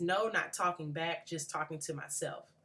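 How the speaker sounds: ordinary talk, nothing marked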